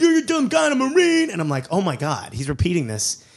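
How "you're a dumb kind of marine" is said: very high-pitched, shrill, acted-out screaming. Retelling a young man who tried to headbutt the speaker, retelling a scream. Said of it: "he's screaming".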